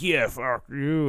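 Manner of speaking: crude bro-style voice, tossed off. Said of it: "in the most boys way possible".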